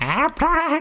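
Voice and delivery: shrill shout, pitched very high. Winnie grabs her new wand, waves it once, shouting. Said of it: "and shouted".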